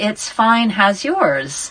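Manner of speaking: very polite, courteous, well-brought-up American manner. Retelling their own answer to a teasing rhyme, in a very polite american way. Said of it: "in a very polite American way".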